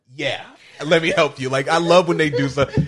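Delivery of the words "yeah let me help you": plain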